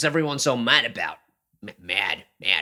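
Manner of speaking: poor fake American accent. Trying out an accent that a listener calls a bad American accent. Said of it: "that's not a good American accent".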